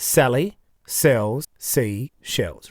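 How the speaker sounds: very slow and deliberate. Demonstrating tongue-twister practice, saying it slowed right down. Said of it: "I'll slow it right down".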